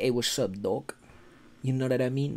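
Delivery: soft, casual put-on New York street accent. Meeting a YouTuber, imagining him talking in a put-on New York accent. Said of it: "talk like a New Yorker".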